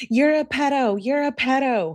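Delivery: mocking whine, high-pitched.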